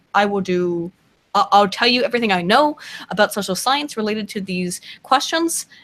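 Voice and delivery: ordinary talk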